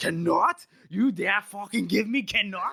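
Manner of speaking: put-on outraged, offended, angry drunken outburst. Retelling a drunk king's outburst at his advisors: imitating an angry drunk king. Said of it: "Giselle's all angry. Now he's angry".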